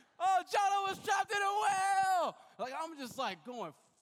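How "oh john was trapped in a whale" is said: wild, very high, very loud shrill battle-cry yell. Charging at him at full speed, retelling own battle cries: retelling yelled battle cries. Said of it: "just yelling random battle cry stuff".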